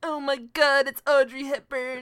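slow, drawn-out nerdy voice. Retelling a scene where Rory walks in, imitating Rory. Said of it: "you sound like, like a Poindexter impression".

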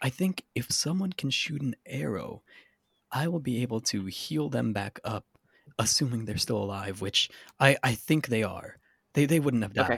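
hushed, leaning-in whisper. Narrator voicing a character leaning in to her teammates, whispering. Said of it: "leans in and whispers to you guys".

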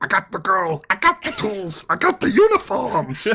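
squeaky, very high, loud voice with big swoops. After praising a character, the speaker attempts a Fidget impression. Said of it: "attempt an impression of fidget".

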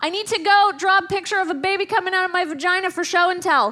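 put-on, high, loud child's hollering. Retelling a daughter running up the stairs: imitating a child yelling. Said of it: "she yells back over her shoulder".

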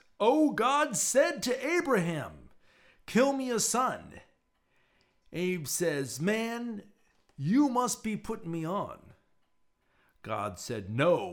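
very slow, very high, drawn-out preaching cadence. Reading a text aloud, in a preacher voice. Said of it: "I'll try to read it in the first part in a preacher voice".

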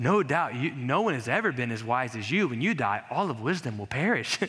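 mock snide, dry, sarcastic, backhanded tone. Paraphrasing a sufferer mocking his friends' wisdom: sarcastic Job voice. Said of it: "He's being sarcastic".

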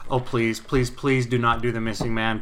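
put-on choked-up pleading. Retelling what they thought during a tribute: retelling a choked-up plea. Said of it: "I was kinda starting to get choked up".

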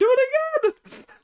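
tiny, very high squeaky cartoon mouse voice. Speaker repeats a line about the Bullet Club in a Tony Khan impression. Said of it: "That's my impression of Tony Khan".

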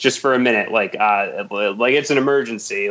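ordinary delivery

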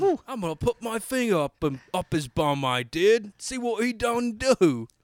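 shifting put-on Cockney accent. Telling a friend what he'll do to someone, shifting Cockney accent. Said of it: "Your accent evolved like five times in that one sentence".

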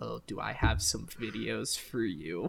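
suave, menacing villain-style drawl. Retelling a roommate wheeling around slowly in a chair: imitating a Bond villain. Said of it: "like a Bond villain".

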